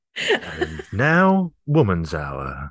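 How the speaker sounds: low, very slow, drawn-out, swooping announcer voice. Announcing a programme after a remark on a Radio Four voice: Radio Four announcer voice. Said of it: "Look at that Radio Four voice".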